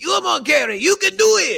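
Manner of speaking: very high, encouraging cheer. Imitating a coach cheering on an Olympian: Béla Károlyi voice. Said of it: "he literally goes".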